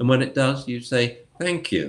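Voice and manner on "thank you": mocking, sarcastic, pitched-up voice. Dog training advice for when the dog finally sits, sarcastic thank you. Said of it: "like that, sarcastically".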